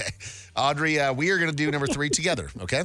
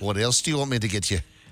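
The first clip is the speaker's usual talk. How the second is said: imitation Scottish accent; 5 semitones lower than usual. Friends taking turns doing a bit in Scottish accents, put-on Scottish accent. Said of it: "the call here is for the Scottish accents".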